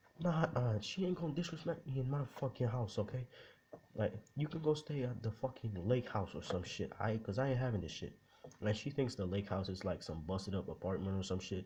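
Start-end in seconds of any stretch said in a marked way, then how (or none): 0.2-8.1 mock heated, indignant, angry rant, pitched up. Speaker retelling the richest man's argument with a woman, retelling a man screaming angrily. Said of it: "And he's screaming".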